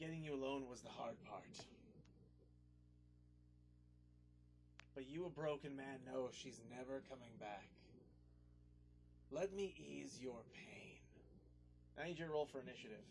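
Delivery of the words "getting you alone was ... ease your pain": dark, shadowy demon voice. Game master voicing a demon confronting the player, in a shadowy demon voice. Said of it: "in the shadowy demon's voice".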